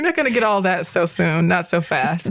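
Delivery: ordinary talk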